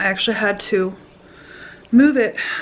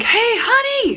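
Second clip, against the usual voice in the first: high, drawn-out yell. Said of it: "I'm yelling in the store for John".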